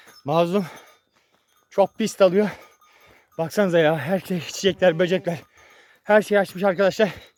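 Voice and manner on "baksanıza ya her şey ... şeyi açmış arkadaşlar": out of breath, breathless and panting. Speaker playing with Mazlum, talking to friends, out of breath. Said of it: "soluk soluğa da kaldım".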